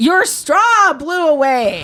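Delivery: put-on, very high, very slow, swooping sing-song holler. Retelling a drive-thru worker yelling: imitating a yell. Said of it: "she yells at me".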